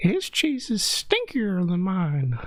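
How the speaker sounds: put-on Italian accent, high, swooping old-cartoon mouse voice. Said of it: "here's my Italian cousin".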